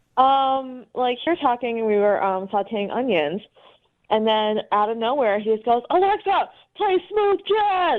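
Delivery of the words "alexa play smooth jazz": abrupt, high, shouted delivery. Retelling what he suddenly said to the speaker while cooking: imitating someone yelling. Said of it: "so he just kept yelling".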